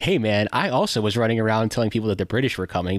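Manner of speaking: ordinary talk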